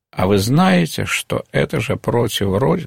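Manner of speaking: plain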